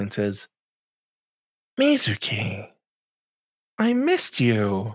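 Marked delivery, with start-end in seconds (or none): 1.8-5.0 slow, drawn-out, swooping small voice. Game narrator voices a voice heard in the head, greeting mizuki: small voice in the head. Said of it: "you hear a little voice in the back of your head".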